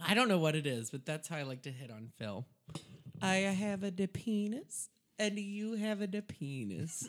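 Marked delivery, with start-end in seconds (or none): 3.2-7.1 very slow, vaguely Italian put-on accent. Demonstrating a pickup line, vaguely Italian-sounding accent. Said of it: "Is that Italian?".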